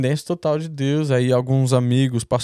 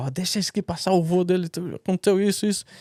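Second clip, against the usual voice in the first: high, urgent, loud shout; 6 semitones higher, 4 dB quieter than usual. Retelling how the woman at the embassy shouted to let the speaker pass: imitating a woman shouting. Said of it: "a mulher já foi gritando".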